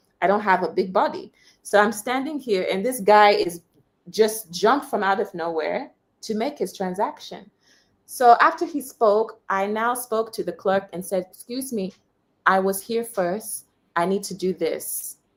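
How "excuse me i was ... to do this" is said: mild, very gentle, polite delivery. Retelling what the speaker told the clerk about being first: very gentle voice. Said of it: "I said it in a very gentle voice".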